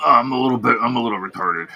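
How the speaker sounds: odd, put-on alien-sounding voice. Showing the other speaker an impression: Alex Jones impression. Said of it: "pretty good Alex Jones".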